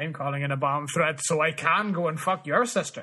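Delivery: put-on accent from the south of Ireland. On an accent tour of the United Kingdom, doing the Southern Irish accent. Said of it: "Southern Ireland".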